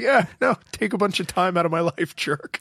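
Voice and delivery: play-acted grudging, put-upon reluctance, pitched high. Imitating the guest host's reply to thanks: imitating a grudging reply. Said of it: "You're like".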